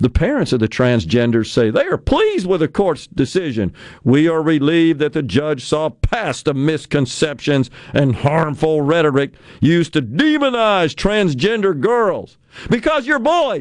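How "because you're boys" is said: high, heated, fired-up yelling outburst. Reacting to a quoted statement from the parents, yelling. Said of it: "I'm sorry. I'm yelling".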